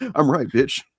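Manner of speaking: put-on brash, cocky, aggressive in-your-face taunting tone.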